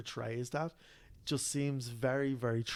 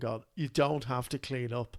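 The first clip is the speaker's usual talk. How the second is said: normal talking voice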